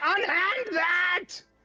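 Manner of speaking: shrill, very high, loud barked yell. Voicing a puppet figure that blasts fire at a player: yelling in character. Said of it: "As he yells".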